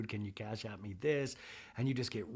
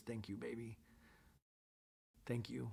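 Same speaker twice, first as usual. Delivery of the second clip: play-acted weepy, teary, crying grateful voice; 11 dB quieter than usual. Retelling her reply to him, imitating someone crying. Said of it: "but crying".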